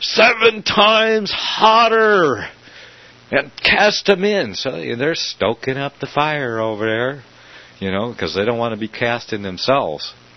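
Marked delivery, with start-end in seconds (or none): 0.0-4.5 very high, drawn-out, raging, furious scream. Acting out him screaming at the guards by the furnace, retelling a furious scream. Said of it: "how he's just screaming at the guards".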